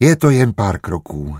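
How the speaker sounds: ordinary delivery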